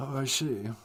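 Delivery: acted unhappy voice. Replying in character to a word of the day: acting unhappy. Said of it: "You don't sound very happy".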